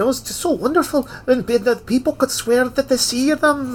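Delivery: put-on heavy, thick Scottish accent, very high-pitched. Quoting the guy from Jurassic Park describing his flea circus: thick Scottish accent. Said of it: "I can hear his thick Scottish accent".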